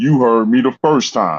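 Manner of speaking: firm, stern fatherly voice. Retelling what he told a man on the phone, in a fatherly voice. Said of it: "in my best fatherly voice".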